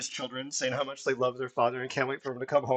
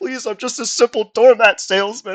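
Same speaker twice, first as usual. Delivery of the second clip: very high, shrill, loud desperate delivery; 9 semitones higher, 15 dB louder than usual. Voicing a beaten doormat salesman as he's begging for mercy. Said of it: "as he's begging for mercy".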